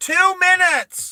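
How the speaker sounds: shrill, very high-pitched yelling. Acting out a mother answering her son's call, retelling a yell. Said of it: "She yells out".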